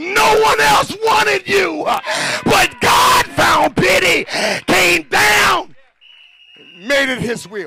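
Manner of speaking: very loud, high, full-volume shouting. Speaking to listeners, then asking if they know why you're shouting; shouting. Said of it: "You know why I'm shouting?".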